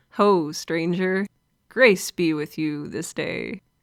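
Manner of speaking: put-on quaint, odd, old-fashioned Renaissance-style voice.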